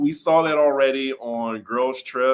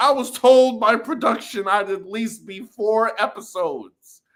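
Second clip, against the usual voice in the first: mocking, high-pitched entitled voice; 9 semitones higher than usual. Describing a housewife's attitude: imitating Dorinda's entitlement. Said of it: "the type of entitlement that she brought".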